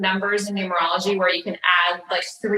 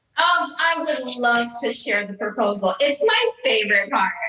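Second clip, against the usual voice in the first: sarcasm laid on plainly, dry tone; 3 semitones higher than usual. Agreeing to share the story of the proposal when asked: sarcastic. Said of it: "You hear the sarcasm, can't you?".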